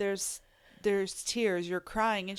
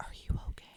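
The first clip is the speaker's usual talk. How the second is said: put-on whisper, quieter. Retelling how someone quietly checked on her: imitating someone whispering. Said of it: "he's whispering".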